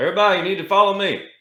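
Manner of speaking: very high, loud, rousing yell. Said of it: "I'm just gonna yell out".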